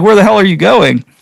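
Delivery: put-on, somewhat angry, demanding police officer voice. Telling about being stopped by a cop, imitating a kind-of-mad cop. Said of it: "the cop was kind of mad".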